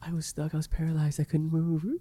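mock tearful, high, crying freak-out wail. Retelling a video of a stuck kid who starts crying: imitating someone crying. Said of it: "he's, like, crying".

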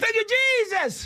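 heated, intense delivery. Leading others in repeating the line: saying it with fire. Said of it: "Say it like someone with fire in the".

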